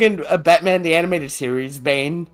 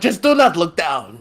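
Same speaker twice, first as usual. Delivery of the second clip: put-on Transylvanian Spanish accent. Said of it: "like a Transylvanian Spaniard".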